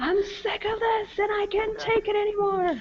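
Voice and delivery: put-on angry outburst. Imagining the network guy blowing up on air: imitating an on-air blow-up. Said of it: "blowing up on air".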